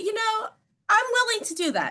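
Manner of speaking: very high, swooping, sing-song, polite agreeable tone. Agreeing to try a dish someone recommends, politely agreeing, pitch rising. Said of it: "the pitch your voice went to in your reply".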